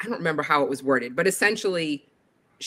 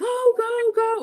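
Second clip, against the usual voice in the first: mock full-throated cheer, very high, top of lungs. Recalling cheering kids on from across the track, retelling a yell at the top of lungs. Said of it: "I'm just yelling at the top of my lungs".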